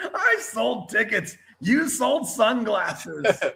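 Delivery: put-on shrill, sky-high drunken screaming. Retell what drunk Ric Flair kept repeating over and over, imitating Ric Flair screaming at the top of his lungs. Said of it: "screaming at the top of his lungs".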